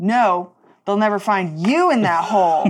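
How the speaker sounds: very indignant, offended, huffy. Speaking as their character in the scene, indignant. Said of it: "Very indignant".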